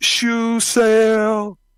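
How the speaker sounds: acted-out shrill, very high distant yell, drawn-out sale. Retelling a bit of moving through the woods, Adam Ferrara yelling in the distance. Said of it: "yelling in the distance".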